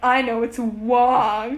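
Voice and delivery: slow, loud, smug, obnoxious know-it-all tone.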